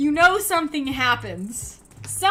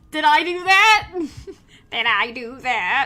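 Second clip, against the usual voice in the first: deliberately bad, drawn-out delivery; 2 semitones higher, 4 dB louder than usual. Doing a quick imitation after a viewer mentions Steve Urkel: crappy Steve Urkel imitation. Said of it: "my crappy, crappy imitation of Steve Urkel".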